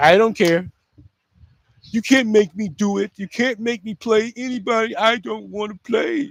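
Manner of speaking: high, drawn-out, flippant drawl, sounding unbothered and unserious. Mocking a coach who refuses to change players: Kevin Stefanski impression. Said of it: "That is my Kevin Stefanski".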